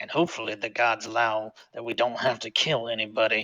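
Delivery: very quiet, very soft, hushed mumble. Voicing his character as he is about to enter, muttering under his breath. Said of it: "He says under his breath".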